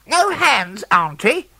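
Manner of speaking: piercing, very high shriek, screeching. Narrator reads a character's line to his auntie, screeching. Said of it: "he would screech".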